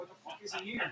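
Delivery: acted-out alarmed, panicky, freaked-out exclamation. Voicing cigar humidity packs as they freak out: mock freaking out. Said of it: "Your Boveda packs would freak out".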